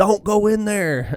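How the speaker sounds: put-on very slow, drawn-out, high dramatic scream. Retelling a dramatic scene where Hank yells at her: imitating Hank screaming. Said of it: "screaming at her".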